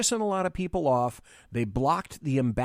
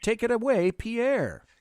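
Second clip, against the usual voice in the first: usual speaking voice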